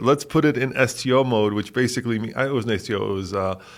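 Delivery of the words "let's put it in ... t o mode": ordinary talk, nothing marked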